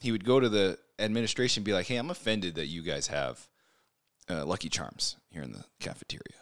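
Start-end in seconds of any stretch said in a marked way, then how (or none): 1.9-6.2 mock deadpan tone, lower in pitch and quieter. Retelling a man's fake complaint to the school administration, mock-deadpan. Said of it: "he'd be deadpan".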